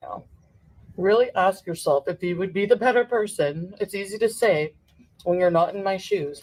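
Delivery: words mushed while chewing food. Addressing someone directly, talking with a mouth full. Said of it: "Talking with your mouth full".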